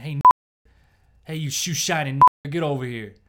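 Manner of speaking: very loud, screaming yell. Retelling what a homeless man in a coffee shop yelled: imitating a man screaming. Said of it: "he just starts screaming".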